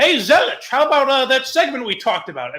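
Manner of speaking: put-on old-school radio announcer voice, sportscaster-style patter. Imitating a radio host with an old-school radio voice: great Meisner voice. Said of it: "This is a great Meisner voice".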